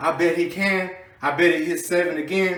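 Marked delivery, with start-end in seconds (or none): none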